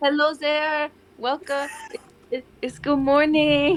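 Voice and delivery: put-on French accent. In a role-play scene, greeting Gwen in the morning: French accent. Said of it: "I got to do the accent".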